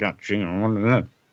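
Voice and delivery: put-on muttering under breath. Retelling a comic character cursing someone: imitating muttering under breath. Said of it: "cursing her under his breath and is like".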